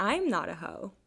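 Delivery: amused, half-laughing, unable to keep serious. Denying being a hoe to the co-host, smiling while speaking.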